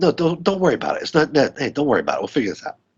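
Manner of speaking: dismissive, offhand brush-off with swooping high pitch. Retelling a movie scene, imitating Alfred Molina waving it off. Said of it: "waves him off, like".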